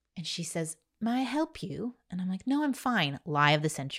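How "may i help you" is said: polite, pitched-up put-on British accent. Retelling how a mentor came over to offer help: imitating a British accent. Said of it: "and she had a British accent".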